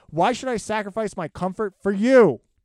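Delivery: put-on angry yelling. Reading out a mad commenter's line with an exclamation mark: put-on yelling while reading a comment. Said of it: "That's why I s-, really yelled".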